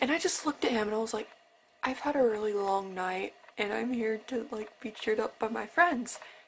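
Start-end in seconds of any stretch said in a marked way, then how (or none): 1.8-6.2 acted, sorry-sounding, fake sadness. Retelling what was told to a police officer: retelling acting upset. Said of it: "the acting talent thing comes into play".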